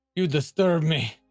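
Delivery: mock deep-voiced monster voice. Mimicking a monster the other speaker voiced earlier: imitating a deep-voiced monster. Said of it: "who's the deep s-, voice sounding one? ... you're like".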